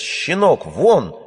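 thin-voiced, high-pitched shout. Narrator reads the father shouting at the boy, shouted in a thin voice. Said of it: "тонким голосом закричал отец".

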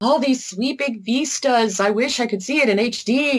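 awed, wishful, gushing voice. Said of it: "you'll probably be like".

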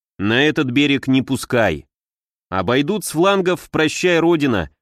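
ordinary delivery

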